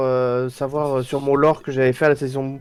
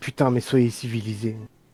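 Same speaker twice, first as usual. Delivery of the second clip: a touch of despair, slightly desperate tone; 3 semitones lower, 5 dB quieter than usual. Speaking in character to a crowd: slightly desperate tone. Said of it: "avec un ton un peu désespéré".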